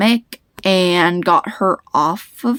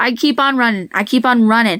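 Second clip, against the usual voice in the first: ordinary delivery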